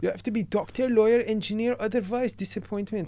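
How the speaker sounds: put-on Persian accent.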